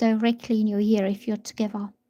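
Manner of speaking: usual speaking voice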